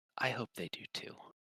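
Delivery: hushed, soft whisper. Voicing a character who leans in, hands on shoulders: whispering.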